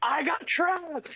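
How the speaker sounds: mock, very high-pitched shrieking scream. Retelling what Ro screamed earlier: imitating Ro screaming. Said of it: "Ro just screaming".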